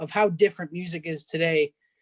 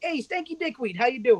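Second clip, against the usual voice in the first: unfazed, casual, breezy, pitched-up voice; 7 semitones higher than usual. Retelling a sitcom scene with a crude greeting: imitating an unfazed casual greeting. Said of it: "the guy in the wheelchair isn't even fazed".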